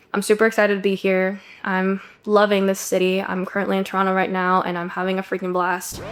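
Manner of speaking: low, flat, bored, tired monotone. The speaker demonstrates someone talking with no vocal variety, in a monotonous tone. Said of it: "with a very monotonous tone".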